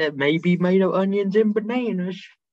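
put-on Southern drawl. Imitating a man from a show about juice, in a southern accent. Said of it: "Why'd you give him a southern accent?".

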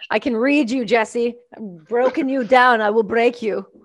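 sudden, unbidden put-on Russian accent. Teasing Jesse, who says he is sweating, in a sudden Russian accent. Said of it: "All of a sudden, I'm Russian".

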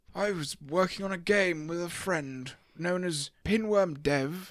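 learned, wizardly, smart-sounding British accent. Speaker tells the others about a game made with a friend, in a smart british voice. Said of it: "Why have you turned into Gandalf?".

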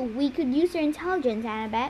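ordinary delivery

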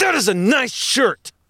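very high, loud, shrill and aggressive. Explaining aggressive complimenting, getting in someone's face and pointing: aggressive complimenting. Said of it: "aggressive complimenting".

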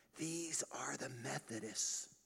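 quiet, soft, hushed whisper. Telling a joke, voicing Peter showing a room in heaven: whispering. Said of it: "Peter whispers".

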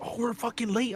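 really mad, stressed-out, fed-up angry griping. Retelling the woman driving the kids while running late: imitating her getting mad. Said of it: "she was getting real fucking mad".

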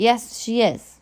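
tough, hard, unyielding tone. Reading a story, a mother answers her arguing child in a tough voice. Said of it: "she says in a tough voice".

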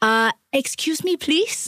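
slow, mock irritated, pointedly polite annoyed delivery. Retelling own words to oblivious people blocking an elevator panel: annoyed excuse me. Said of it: "I got so annoyed with this".

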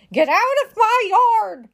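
shouting, high and drawn-out. One character chases another out of her yard, shouting. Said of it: "shouted Eugenia".

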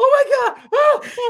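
very high, drawn-out, acted frightened yelp. Retelling a near accident: imitating own scared cry. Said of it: "I was so scared".

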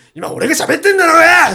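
put-on shrill, furious shout at full volume. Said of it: "そんな怒ってないと思う".

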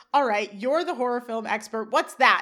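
plain

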